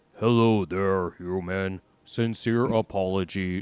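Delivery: flat, deep, slow, level monotone drone. Showing how every Elcor speaks, in a deep monotone Elcor voice. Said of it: "They just talk extremely monotone, deep voice".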